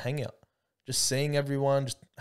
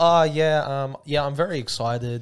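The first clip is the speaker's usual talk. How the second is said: put-on loud, very slow, stiff, stilted speechy delivery; 2 semitones higher, 8 dB louder than usual. Mocking how another speaker answered a question: imitating a stiff political-speech answer. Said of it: "sound like he's trying to make a political speech".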